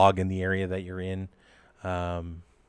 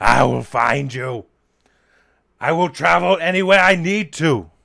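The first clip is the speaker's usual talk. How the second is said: very loud, high, rising scream; 8 semitones higher, 11 dB louder than usual. Game master voices DeGeest yelling from up top, DeGeest screaming. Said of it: "he just starts screaming".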